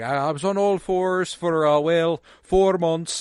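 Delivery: put-on Irish accent. Retell what a woman told somebody at a red carpet, imitating a really thick irish accent. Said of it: "she's doing like a really thick Irish accent".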